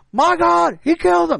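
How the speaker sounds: very high, rough, loud cracking cry. Trying the announcer impression again: Jim Ross voice. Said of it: "There we go. It's a little bit different".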